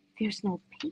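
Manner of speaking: mock consoling, reassuring, soothing delivery. Retelling what a crying partner said in the car: comforting tone. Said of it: "in a comforting kind of way".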